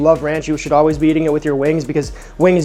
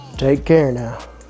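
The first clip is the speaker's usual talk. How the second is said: put-on cowboy voice; 3 semitones lower than usual. Signing off at the end of the video: cowboy impression. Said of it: "That's my cowboy impression".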